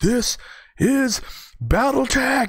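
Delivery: screaming really loud, high-pitched and drawn out.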